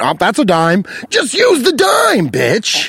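lively, swooping, animated voice. Retelling what a man counting pennies said: imitating the customer. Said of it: "it sounded like Jesse Pinkman".

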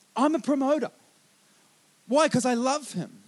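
ordinary talk, nothing marked

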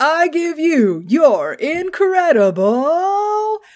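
very slow, high, swooping, incredible stretched out. Retelling a big dramatic announcement before the champion comes out: imitating the Grandmaster. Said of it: "the Grandmaster is like".

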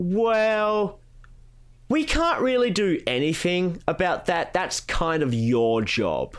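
slow, put-on patronizing tone, "well" stretched out. Recounting how others answered a request for help: mock-condescending tone. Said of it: "in that sort of condescending tone".

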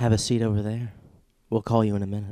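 sensual, seductive female voice. Playing a receptionist after being asked for a sensual woman voice: sensual woman voice. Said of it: "Sensual woman, go".

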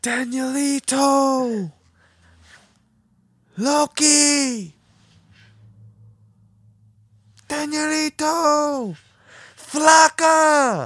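very high, very slow, stretched calling out scream. Walking home from a club, speaker imitates a woman they heard screaming. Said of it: "we hear this woman just screaming".

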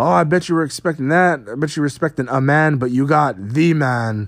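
bad, horrible, missed attempt at an Irish accent. Retelling an entrance, doing Becky Lynch's lines in a bad accent. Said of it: "I can't do an accent".

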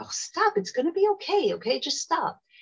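very high, swooping, impatient, exasperated voice. Speaker showing how tone changes the same reassuring words: not calm, irritated. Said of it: "your tone is not transmitting calm".

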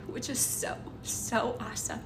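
choked-up, half-whispered, with a catch in the voice.

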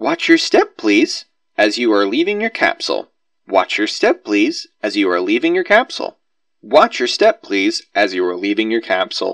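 very loud, mechanical, recorded loudspeaker announcement voice. A recorded loudspeaker voice repeats as the capsule stops: mechanical recorded announcement. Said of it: "A recorded voice over a loudspeaker repeats mechanically".

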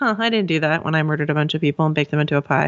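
put-on blasé, offhand voice. Retelling a TV scene, quoting Arya's reply about the pie: Arya's blasé voice. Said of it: "so blasé about it".

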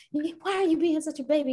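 very high, loud, scolding angry bellow. Retelling what an angry dad shouted during a game: imitating dad yelling. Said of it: "he was yelling at me and he was like".

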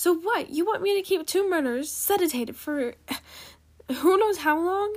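loud, high-pitched shouted retort. A woman argues with an unhelpful guard, yelled. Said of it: "she yelled at the unhelpful guard".

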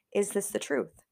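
ordinary delivery

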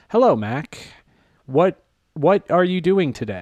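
stilted, wooden, stiff robotic delivery. Imitating how people talked in something the speaker found stupid, stiff robotic voice. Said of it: "they would talk like this".

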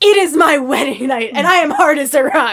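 very petulant, high, loud shouting. Retelling a movie scene where the husband speaks up: imitating a petulant yell. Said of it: "just yelling very petulantly".

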